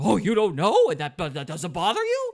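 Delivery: booming, loud indignant outrage with swooping pitch. Retelling an argument, imitating Tucker Carlson getting indignant. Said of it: "Tucker Carlson got all indignant".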